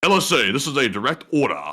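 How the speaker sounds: put-on light, faint touch of a British accent. Voicing a character's direct order to viewers, in a slight British accent. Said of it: "It's going to be a slight British accent".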